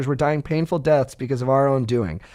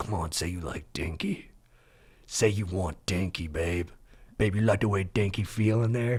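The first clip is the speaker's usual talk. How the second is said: very deep, low put-on manly, macho voice; 7 semitones lower, 9 dB quieter than usual. Retelling what gets said to a partner, put-on masculine voice. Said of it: "I still put it in my masculine voice".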